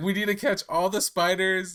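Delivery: genuinely worried, high-pitched shouting. Retelling a Spider-Man game with Toby, imitating Toby yelling. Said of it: "and he's yelling".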